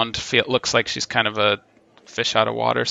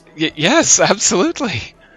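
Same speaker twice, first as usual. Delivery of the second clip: flustered, bashful elf voice, higher and louder; 8 semitones higher, 5 dB louder than usual. Voicing a flustered elf at a party: flustered blushing elf. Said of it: "She's, like, blushing".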